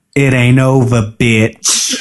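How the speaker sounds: venomous put-on voice. Retelling how one woman turned to another, imitating Nikki's venomous voice. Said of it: "the venom in her voice is just so intense".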